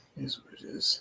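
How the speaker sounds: hushed, whispered mutter under the breath. A character speaking to Frankie, muttered under his breath. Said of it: "He just says under his breath".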